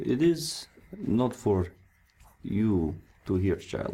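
slow, portly, burly man's voice. Voicing a portly burly man who refuses to tell a child the news: voicing a portly burly man. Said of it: "kind of a burly man, uh, very portly".

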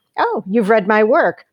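plain

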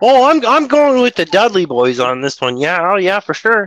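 put-on puppet frog character voice with a Canadian accent. Answered as Kermit, picking a side in a vote: Canadian Kermit voice. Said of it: "You sound like a Canadian Kermit".

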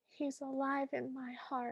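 very hushed, meek and sorrowful. Quoting a character's reply while discussing the film: imitating a sad, meek line. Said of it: "She says it so sadly and so meekly".

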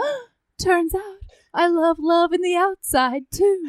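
high, put-on creepy-guy voice. Recapping the show, speaker quotes the moment in a Creepy Tim impression. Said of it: "a really good Creepy Tim impression".

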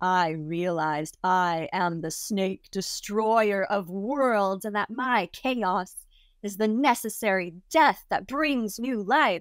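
put-on gleeful, evilly excited tone. Retelling what a man said about his ayahuasca trip: imitating someone excited in an evil way. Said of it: "getting really excited about telling me this in a kind of evil way".

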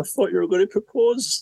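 put-on very high, squeaky old voice. Retelling what she said over drinks by the beach, in an old squeaky voice. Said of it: "an old squeaky voice".

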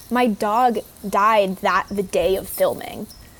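normal talking voice

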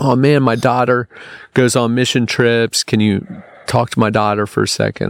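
ordinary delivery

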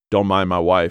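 ordinary delivery

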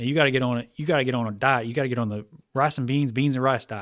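put-on Southern drawl. Speaker quoting a financial educator's advice to beginners, imitating a Southern drawl. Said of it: "he's got his Southern drawl".

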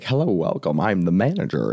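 put-on swooping old-timey 1950s man's voice. Imitating a man he listens to, greeting customers at a car dealership, 1950s guy voice. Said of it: "he just talks like a guy in the 50s would talk".

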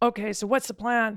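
imitated big, booming voice. Retelling a phone call from the executive producer: imitating a big voice. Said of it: "big voice".

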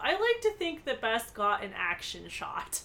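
ordinary talk

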